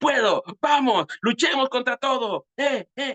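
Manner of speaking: high, eager, fired-up enthusiastic hero voice. Showing the audience the voice planned for a character, the enthusiastic voice of David. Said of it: "La voz de David es, ¡ah, entusiasta!".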